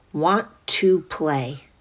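put-on soft, quiet small boy voice. Retelling a voice heard in the right ear while leaving, little boy's voice. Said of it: "in a little boy's voice".

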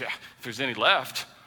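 mock sarcastic delivery. Acting out a husband's reply about drinking more wine: mock sarcastic reply. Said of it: "But you're pretty sarcastic".

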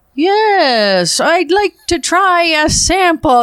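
every word stretched very slow, high, dragged out. Retelling a radio man asking for a food sample: imitating Ian Byers, words dragged out long. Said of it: "he drags it out real long".

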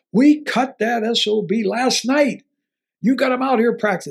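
heated, angry rant. Retelling how a man ran up at him, the speaker does the angry swearing. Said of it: "He's swearing at me".

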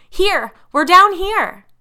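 high, shrill, all-out full-volume scream. Reading a story, a girl calls to parents arriving home; screaming as loudly as possible. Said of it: "she screamed as loudly as she could".

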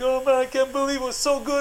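put-on baby-like crying, high and weepy. Retelling a limo ride, the speaker acts out Carl: imitating Carl crying like a baby. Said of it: "he was crying like a baby".

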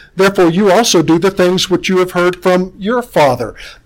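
ordinary delivery

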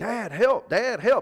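very high, very loud, drawn-out shriek. A dad retells his daughter dangling from a tree: retelling a scream for help. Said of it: "she's screaming at me".

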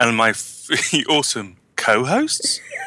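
slow, rising question tune on "co-hosts".

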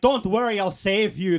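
bad, failed Irish accent. Quoting an irish game character who offers help: bad irish accent. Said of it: "I can't do an Irish accent".

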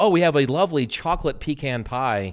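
normal talking voice

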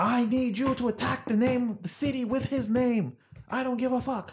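put-on terrible German accent. Mocking the orders of a leader just called a moron, in a terrible german accent. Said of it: "Terrible German accent".

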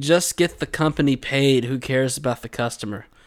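ordinary delivery

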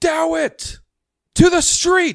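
piercing, very high, very loud shriek. Game master voicing a woman calling from a broken window: screaming. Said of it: "you hear her scream".

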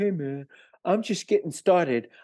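small, high-pitched hippie voice. Retelling a conversation about their age, Richie's hippie voice. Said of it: "in his little hippie voice".

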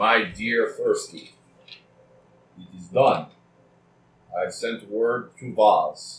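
slow, bad put-on dragon voice. Reading a letter aloud in a poor dragon voice. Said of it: "I'm going to read this in my best poor dragon here".

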